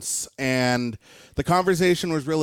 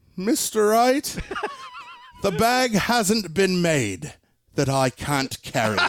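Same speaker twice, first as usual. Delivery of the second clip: clumsy, bad, put-on sing-song English accent; 5 semitones higher than usual. Act out Rory McIlroy looking at Mr. Wright and answering about the bag, in a bad English accent. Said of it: "I'm going to get in a bad English accent here".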